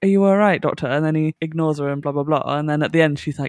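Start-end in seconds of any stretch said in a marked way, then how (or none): 0.0-0.9 casual, light, offhand tone. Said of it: "She goes".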